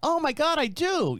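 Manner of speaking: put-on astonished gasp.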